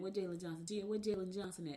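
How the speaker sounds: normal talking voice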